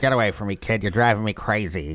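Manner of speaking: put-on old-movie tough-guy voice. Speaker jumping between voices while answering questions, Humphrey Bogart impression. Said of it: "Now I'm Humphrey Bogart".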